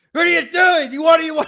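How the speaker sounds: shrill, very loud, high-pitched screaming shriek.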